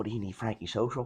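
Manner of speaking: soft, hushed half-whisper under the breath. Retelling a late phone call where Ma answers: imitating someone half-whispering. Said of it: "and she whispers".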